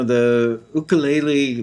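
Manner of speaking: put-on Hawaiian accent. Saying the word ukulele in a best Hawaiian accent. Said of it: "trying to do my best Hawaiian accent there".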